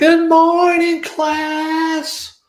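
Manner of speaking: very loud, shrill, booming delivery. Retelling a video where a teacher greets the class: imitating a really loud lady. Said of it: "the lady's really loud".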